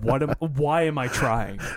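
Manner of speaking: put-on, imitated defeated tone. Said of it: "a defeated voice".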